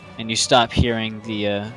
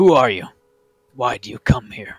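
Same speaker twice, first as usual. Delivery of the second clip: put-on very old creature voice; 6 dB louder than usual. Voicing a creature heard from a dark hole: very old voice. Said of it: "you hear a very old voice".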